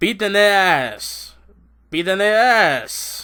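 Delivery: very drawn-out lazy delivery. Retelling how he said the line, imitating a lazy delivery. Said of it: "he says it in the most laziest way".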